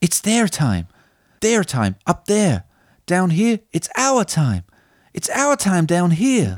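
proper dramatic acting, slow, swooping, full of emotion. Acting out a film line for a guessing quiz: acted with emotion. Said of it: "I'm gonna proper act this one".

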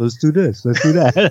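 unruffled, easygoing, matter-of-fact delivery. Describing a video of tandem flights, imitating Alan's calm voice. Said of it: "Just very calmly just saying".

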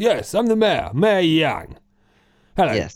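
very posh, plummy, upper-crust army brigadier voice. Speaker voicing the mayor in a scene, very posh brigadier voice. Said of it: "Very posh, very brigadier".

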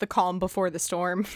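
ordinary delivery

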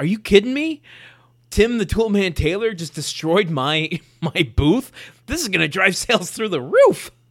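mock thrilled, very loud, high, excited outburst. Retelling how the guy reacted to his wrecked booth: imitating an excited man. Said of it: "He is really excited about it".

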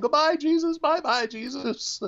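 put-on play-acted tearful little kid voice, very high. Retelling a child's goodbye: imitating a crying child. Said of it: "the child was just crying, going".

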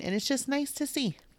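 high, soft teary voice, breaking. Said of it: "Tess is crying".

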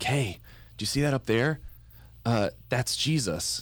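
reenacted, mimicked whisper. Retelling whispering to a small child at Mass as the priest nears consecration: retelling own whisper. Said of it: "I'm like whispering".

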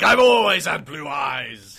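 loud, slow delivery with laughter.

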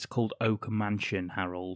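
ordinary delivery

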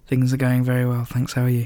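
slow, smooth, relaxed and sophisticated voice. Greeting the other host as the show begins, answer in a smooth, slow, sophisticated voice. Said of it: "so smooth and slow and so sophisticated".

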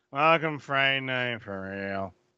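mock blasé, unimpressed delivery. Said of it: "that's how this line felt to me".

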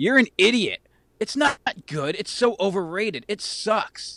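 hostile, angry acted voice. Reading out the internet's general response to his question, as a mock-angry internet commenter. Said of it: "It just makes you angry".

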